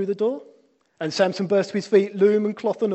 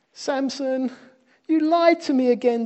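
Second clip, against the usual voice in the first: whining, high-pitched voice; 7 semitones higher than usual. Reading the story, Delilah complains to Samson: whined. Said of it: "Delilah whined".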